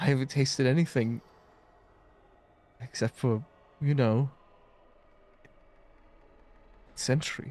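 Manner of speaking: on the verge of crying, near tears. Voicing a character who has just drunk some wine: on the verge of crying. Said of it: "almost like he's about to start crying".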